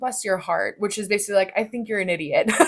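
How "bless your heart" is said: syrupy, pleasant, saccharine politeness. Explaining a phrase said with a smile that isn't a compliment: sweet, smiling delivery. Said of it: "it's like us saying it with a smile".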